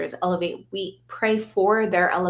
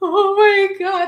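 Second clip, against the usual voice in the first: mock very high voice, raised, holding back tears; 13 semitones higher, 7 dB louder than usual. Retelling videotaping a tribute with pictures of their dad: retelling holding back tears. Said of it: "like trying not to cry".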